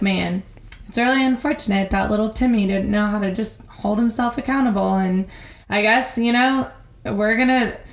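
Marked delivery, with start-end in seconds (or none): none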